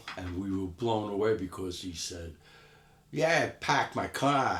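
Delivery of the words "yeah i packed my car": put-on Boston accent, pitched up. Retelling what a friend from Boston said: imitating a Boston accent. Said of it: "He's got the accent".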